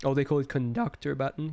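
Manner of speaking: cracking voice. Speaker reacting while rating pictures, voice cracking. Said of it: "that voice crack was insane".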